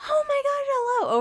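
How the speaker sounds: exaggerated, over-the-top fake excitement, very high. Demonstrating how to greet someone: over-the-top fake excitement. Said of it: "over the top, faking it".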